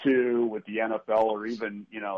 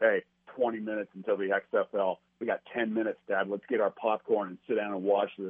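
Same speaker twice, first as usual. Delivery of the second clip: normal talking voice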